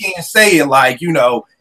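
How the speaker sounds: ordinary delivery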